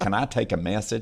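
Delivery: plain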